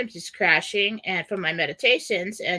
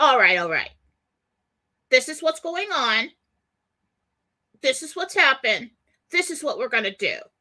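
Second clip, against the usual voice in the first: blunt, take-charge, no-nonsense grandpa voice, pitched up; 6 semitones higher than usual. Remembering how grandpa used to talk in the late seventies, imitating grandpa's no-nonsense talk. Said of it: "my grandpa would talk like that".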